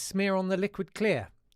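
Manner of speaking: ordinary delivery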